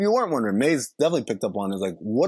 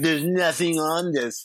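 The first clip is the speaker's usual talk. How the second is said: snooty, catty, snotty, dismissive tone; 4 semitones higher than usual. Retelling what a character in a film said: imitating a catty, snotty tone. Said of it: "She's very catty and snotty".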